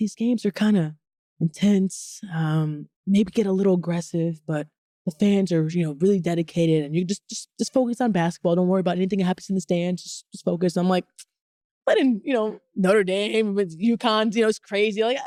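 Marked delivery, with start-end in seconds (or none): 0.0-10.8 whispered speech. Retelling what the manager told before the game: imitating a whisper. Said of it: "she's, like, whispering".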